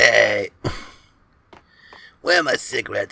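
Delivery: put-on heavy smoker voice. Imitating a game character after remarking on his voice: imitating a heavy smoker's voice. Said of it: "That's the voice of a man who just, like, smokes a pack of cigarettes an hour".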